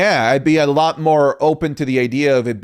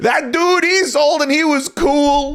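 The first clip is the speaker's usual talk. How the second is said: higher, put-on insecure wrestler promo voice; 13 semitones higher than usual. Mocking a promo as insecure-sounding: insecure-sounding CM Punk impression. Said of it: "the most insecure sounding promo from C M Punk".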